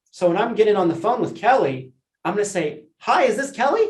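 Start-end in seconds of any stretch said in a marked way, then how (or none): 3.0-3.9 eager, enthusiastic, upbeat voice with pitch raised. Tonality training, greeting someone on a phone call: excited, enthusiastic, smiling. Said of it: "Excited, enthusiastic, smiling".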